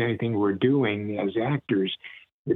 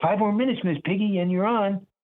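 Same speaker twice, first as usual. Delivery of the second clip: put-on high, whiny child voice, called out; 10 semitones higher than usual. Showing how the stage manager Scooter sounded in the shows: Scooter voice. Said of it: "he kinda made Scooter like this".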